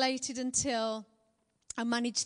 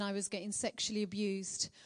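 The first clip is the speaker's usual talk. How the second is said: ordinary delivery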